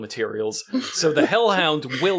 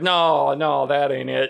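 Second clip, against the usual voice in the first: slow, mock sulky, petulant tone. Retelling a TV scene, voicing Wild Bill's reply: imitating a petulant reply. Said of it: "he's got this real petulant attitude".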